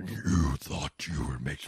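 deep devil voice. Playing a devil with red eyes and fake horns, deep devil voice. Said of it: "Just lower my voice on a modulator to the point of just being like".

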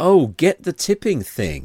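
loud, high, drawn-out shout. Retelling a woman at a bar shouting after them: imitating someone shouting. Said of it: "she's shouting after me".

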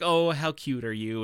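put-on, amused, said through a laugh. Retelling how the bank teller laughed at the boy's note: imitating a teller laughing. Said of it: "she just laughs like".

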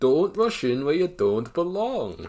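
put-on slight Irish accent. Delivering a character's safety rule for the listener, in a slightly Irish put-on voice. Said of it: "that sounds a little Irish to me".

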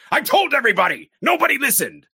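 play-acted enraged shout, very loud, high and shrill. Quoting a favorite movie line after the character is blamed over his patient, imitating Loomis yelling angrily. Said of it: "angrily, he yells".

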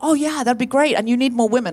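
put-on sugary, sweet, extra-nice voice. Retelling agreeing to do a show, in a put-on really nice voice. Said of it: "But I said in a really nice voice. ... I said it like that".

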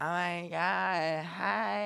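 soft, flamboyant, campy put-on voice. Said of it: "What is that voice?".

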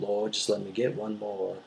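mock drawling accent. Retelling a movie hero's prayer while carrying soldiers: imitating a thick drawl. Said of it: "that was a fantastic accent".

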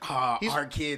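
overjoyed, super happy, gushing voice. Imitating the creepy non-Joker Joker talking about the kids: imitating Joker being super happy. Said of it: "super happy".

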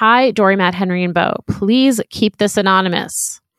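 plain

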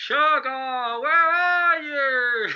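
mock yelling in Irish accent. Recounting a man on the Irish moors calling for a buried horse, retelling a yell in Irish accent. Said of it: "yelled, ... in an Irish accent".

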